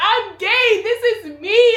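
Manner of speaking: acted tearful sobbing, high and drawn out. Retelling own past words in an argument with Mom: imitating own past crying.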